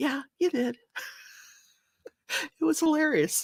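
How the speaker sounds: talking through giggles. Telling about a friend forgetting to mute: laughing while talking. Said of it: "I'm sorry, I shouldn't laugh at her".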